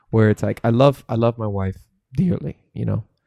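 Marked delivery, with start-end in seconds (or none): 0.6-2.5 cracking voice, much slower. Speaking earnestly in a conversation, with the voice cracking. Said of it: "my voice cracked when I said that".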